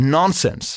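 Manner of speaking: put-on nonsens pronounced with American accent and articulation. Quoting how a man says a word: American accent on Nonsens. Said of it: "in der amerikanischen Artikulation".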